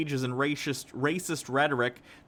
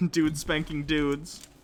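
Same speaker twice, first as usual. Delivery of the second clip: ordinary delivery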